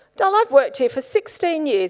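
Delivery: put-on deadpan, matter-of-fact, dead straight, no joking. Retelling what the pub owner said about m i six: imitating a deadpan reply. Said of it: "absolutely deadpan".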